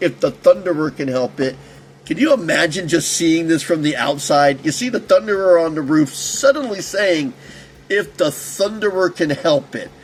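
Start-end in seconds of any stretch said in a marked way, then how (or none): none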